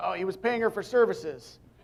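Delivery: quick, blurted, acted-out mild mock yell. Retelling an answer shouted while running off the stage: retelling own shout. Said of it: "I just shouted out".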